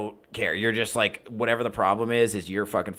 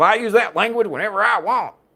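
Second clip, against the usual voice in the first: very high, loud, shrill put-on Southern accent; 13 semitones higher, 7 dB louder than usual. Retelling what a cussing customer said back to the speaker, put-on southern accent. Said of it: "I don't know why I'm doing him Southern".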